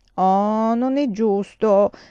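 very slow, loud, drawn-out grumbling. Narrator reading a little girl's line after the conductor says there are no bandits, complaining. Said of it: "si lamentò la bambina".

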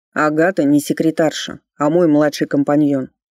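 calm and low. [name] corrects a guest while his junior partner looks on; calm correction. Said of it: "спокойно поправил гостя Ричард".

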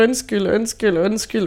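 sobbing and weeping tearfully through every repeat. Recalling breaking down over her, the speaker is retelling sobbing apologies. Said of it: "ligger og hulker oven på hende og bare siger".

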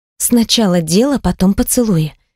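ordinary talk

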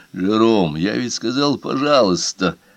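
ordinary delivery

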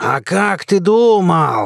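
snarled, menacing growl, думал drawn out. Narrator reads the old man's reply before he lunges, growled. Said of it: "прорычал Яков".

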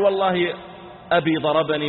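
plain

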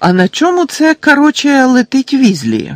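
very high, lazy, swooping contemptuous shout. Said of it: "зневажливо вигукнув своїм лінивим голосом Мелфой".

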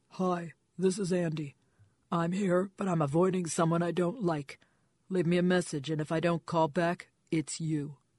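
deep rumbling voice. Narrator reads a voicemail greeting aloud in Andy's rumbling voice. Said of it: "She had one of those rumbling, hormone-soaked voices".

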